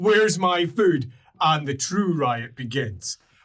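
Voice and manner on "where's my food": upset ogre voice, pitched lower. Voicing upset ogres looking around for their lost food: upset ogre voice. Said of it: "very upset ogres as they look around and go".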